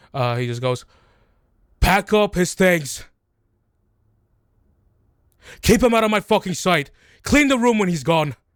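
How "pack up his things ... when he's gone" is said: furious, enraged, high-pitched yelling. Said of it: "he continues to yell".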